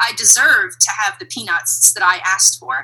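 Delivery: ordinary talk, nothing marked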